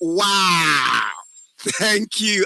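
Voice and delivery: delighted, warm, happy, excited tone. Showing how to thank someone for a gifted phone, happy excited thanks. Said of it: "if I'm to do the happiness one and I'm say thank you".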